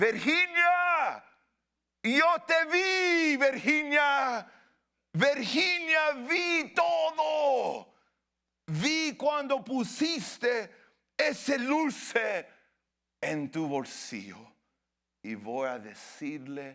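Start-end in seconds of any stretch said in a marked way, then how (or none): 0.0-12.5 very high, swooping, shrill put-on accusing yell. Telling a story, voicing someone who saw candy pocketed: retelling a shout. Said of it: "una voz que empezó a gritar".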